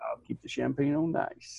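mock whispered, breathy, creepy delivery. Repeating a line from the admiral: imitating a creepy line delivery. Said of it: "creepy on that when he said".

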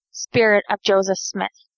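ordinary delivery

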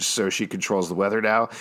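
ordinary delivery

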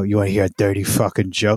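put-on elderly man voice. Recalling childhood, the speaker quotes an old man at a shiva, imitating an old man. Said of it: "an old man would come up to you".

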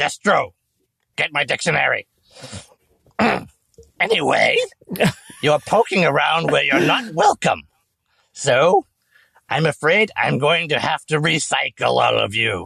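high, loud, swooping shrieking robot-villain voice. The game master voices a villain addressing the players' characters, high-pitched shrieking voice. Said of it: "high pitched sort of shrieking voice".

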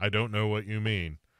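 flat robotic monotone with fake laugh. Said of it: "why are you just monotone all the time".

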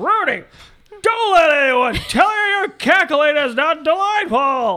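very high, booming put-on voice, belted out loud. Reading out a listener's review title, as asked: Jimmy Stewart impression. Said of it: "Just do Jimmy Stewart".

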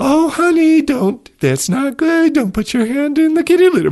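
mock saccharine parent voice, very high. Imitating parents warning a child, in a put-on sickly sweet voice. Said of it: "sickly, sweet sort of voice".

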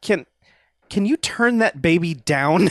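mock irritated tone, stumbling over "can". Retelling a movie character's line to another speaker: imitating an annoyed request. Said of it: "just kind of annoyed".

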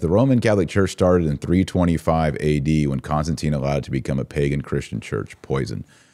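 ordinary delivery

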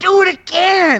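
very high, screamed, put-on hillbilly voice. Retelling a film scene where a spectator screams at jousters: imitating Stephen King screaming. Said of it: "he's just screaming at them".

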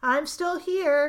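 uneasy voice. Firepaw answers Blue Star, who has just called his name: nervous answer. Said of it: "he answered nervously".

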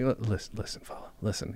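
gentle, kind put-on voice. Imagining a gentle breakup message delivered the nicest way: gentle Stephen Root impression. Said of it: "the most gentle, nicest way".

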